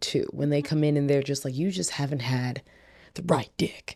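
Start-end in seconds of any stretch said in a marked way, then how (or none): 1.6-4.0 mock-confident, said with conviction, quieter. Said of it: "they always say it with conviction".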